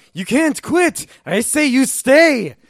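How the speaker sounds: shrill, very high, very loud upset yell. Recapping a cartoon, acting out a character's outburst: retelling an upset yell. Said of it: "he gets really upset and starts yelling".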